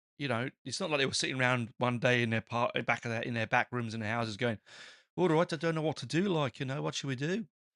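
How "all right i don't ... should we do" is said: terrible put-on Birmingham accent, pitched up. Imagining people in their back rooms deciding what to do: bad Birmingham accent. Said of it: "That was a Birmingham accent".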